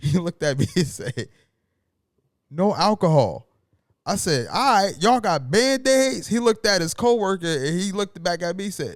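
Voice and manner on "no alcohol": put-on Haitian or Jamaican accent, louder. Retelling a convenience store clerk's reply, in his Haitian or Jamaican accent. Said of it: "in his Haitian or Jamaican accent".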